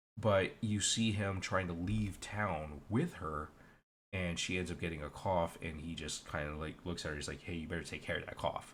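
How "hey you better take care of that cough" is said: mock menacing, threatening tone, dripping with menace. Retelling how a character warns another about her cough: imitating a menacing line. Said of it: "he says it in a very menacing way".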